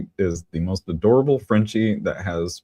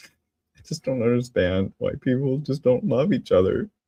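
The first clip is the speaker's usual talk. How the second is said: pitched-up fake crying, tearful and mock emotional; 5 semitones higher than usual. A host describing a serious on-camera persona, in fake crying. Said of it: "I'm going to cry".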